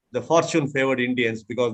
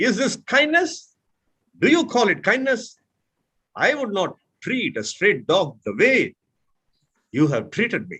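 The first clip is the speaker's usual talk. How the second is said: openly angry delivery with high pitch; 6 semitones higher than usual. Speaker demonstrating an example sentence for an angry context, in an angry tone. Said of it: "This is angry context".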